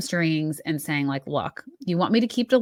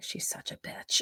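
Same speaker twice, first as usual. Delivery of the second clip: put-on quieter mutter under the breath. Retelling a moment when Vicki fought with Teddi, imitating Vicki muttering under her breath. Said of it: "under her breath".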